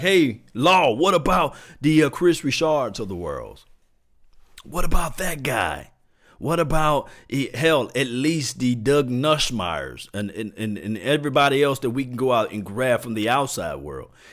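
usual speaking voice

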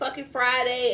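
plain

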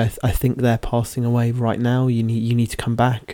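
put-on sad tone. Retelling the nurse returning to say the patient is passing; retelling a sad remark. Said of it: "went sadly".

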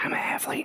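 quick, whispered delivery. Speaker announces a quick whisper, then whispers a short aside. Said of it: "I'm going to whisper really quick".

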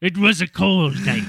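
put-on pirate voice. Teasing a storyteller about how every story starts, Family Guy pirate voice. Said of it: "the pirate from Family Guy".

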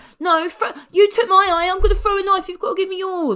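thin, reedy little voice at very high pitch. Retelling how a character speaks, imitating a reedy little voice. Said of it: "And then he speaks like".

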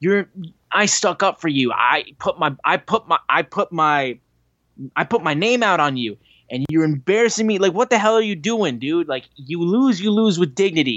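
play-acted furious rant. Retelling a wrestler's words after a cheap shot: imitating furious Darby. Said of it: "He's furious".

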